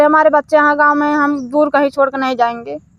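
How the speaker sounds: ordinary talk, nothing marked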